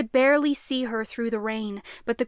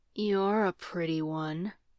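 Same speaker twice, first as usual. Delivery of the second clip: low, deep, demon-like voice; 4 semitones lower, 5 dB quieter than usual. Narrator reading a story, voicing Leto's line in his deep demon voice. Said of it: "Leto said in his deep demon voice".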